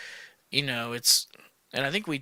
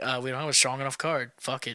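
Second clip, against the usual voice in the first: ordinary talk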